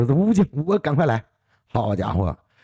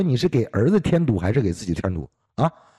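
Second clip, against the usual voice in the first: normal talking voice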